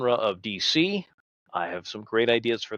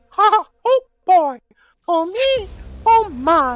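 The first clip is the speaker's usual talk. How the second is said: pitched way up and loud; 7 dB louder than usual. Showing off an impression after offering to do bad impressions: Mickey Mouse voice. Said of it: "I can do a mean Mickey Mouse".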